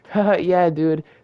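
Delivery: mock insincere chuckle. Retelling how they reacted while someone was told off, fake laughing agreement. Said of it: "I'm fake as fuck".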